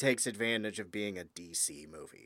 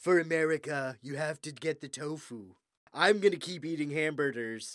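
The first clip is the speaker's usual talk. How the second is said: slow, drawn-out politician-style voice; 3 semitones higher than usual. Imagining a president telling everyone to eat tofu: Trump impression. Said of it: "you just did a great impression".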